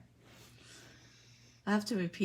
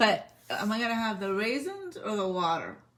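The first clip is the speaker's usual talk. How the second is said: normal talking voice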